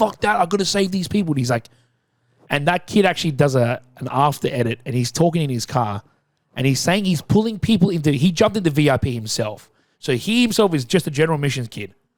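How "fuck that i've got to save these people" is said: high, light, mild yell. Retelling a viral TikTok of a kid on a ladder, retelling a yell. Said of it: "he's yelling out".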